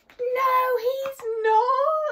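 very high, shrill scream, not stretched long. Narrator reading a story, a child warns Mum about a bear, screamed. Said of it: "screamed Eddie".

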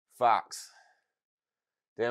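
out of breath, winded and panting. As if you just sprinted to reach a goal in a game and are catching your breath as you name where you are. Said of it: "I'm out of breath".

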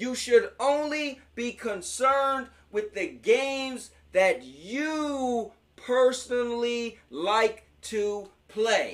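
very slow, deliberate, each word laid out, "you" drawn out. Telling viewers there should be no console war, saying it really slowly. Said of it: "I'm going to say that really slow".

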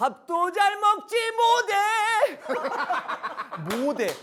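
put-on high slow Jeolla dialect accent.

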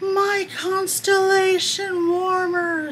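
frantic, high, slow, drawn-out yell.

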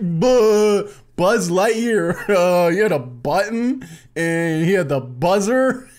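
mocking imitation voice. Mocking the other speaker's rambling Buzz Lightyear eulogy, mocking imitation. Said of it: "And he's just like".

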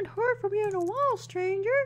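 random, very high, made-up cartoon voice. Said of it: "I just did a random voice".

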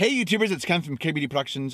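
words crammed together far too quickly, rattled off. Opening his video with his channel greeting: said too fast. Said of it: "I say it too fast".

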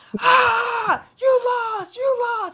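play-acted very high, shrill, furious scream, "you" drawn out. Recounting how Jace screamed at the park over a bet, retelling a scream. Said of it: "sits there at the park and screams".

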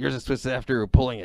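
put-on acted cartoonish teenager voice. Retelling a cartoon scene to friends: Beavis voice. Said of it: "That sounds like Beavis".

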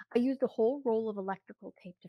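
ordinary delivery, nothing marked

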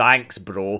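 put-on speech through clenched teeth. Recapping a game conversation, quoting a character's thanks through put-on gritted teeth. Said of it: "as she says through gritted teeth".

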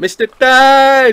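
very loud, very high, shrill yell, one word drawn out. Searching for a man who fell in the water from a boat, shouting. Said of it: "What are you shouting at".

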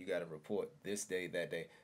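normal talking voice

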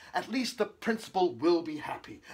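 ordinary delivery

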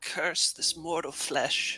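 faint, slow, high, barely audible whisper. Voicing a character's half-delirious parting words: barely above a whisper. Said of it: "parting words that are barely above a whisper".

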